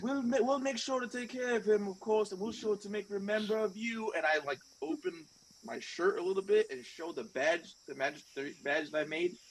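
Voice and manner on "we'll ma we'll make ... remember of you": raised, pitched-up yell. In a role-play scene, a character answers a departing man, yelling back.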